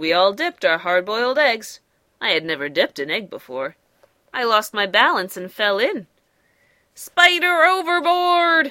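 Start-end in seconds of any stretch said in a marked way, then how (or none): 6.9-8.7 very high, urgent, alarmed shout. Reading a story aloud, Fly's cry as the spider falls in: shouted. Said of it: "shouted Fly".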